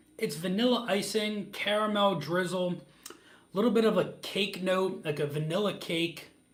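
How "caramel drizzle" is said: usual speaking voice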